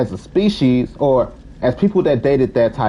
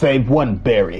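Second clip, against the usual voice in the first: put-on dark comic-book superhero voice. Mid-discussion of stereotypes, saying a line in a Batman voice. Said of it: "like in my Batman voice".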